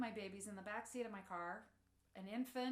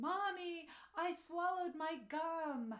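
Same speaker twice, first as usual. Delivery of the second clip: mock teary child sobbing, high and slow; 7 semitones higher, 3 dB louder than usual. Retelling how a child ran up after swallowing gum: imitating a crying child. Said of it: "comes running to me crying".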